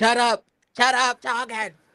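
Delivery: deep, put-on Brooklyn accent. Showing how to tell someone off: deep brooklyn voice. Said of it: "you gotta put on your deep Brooklyn voice".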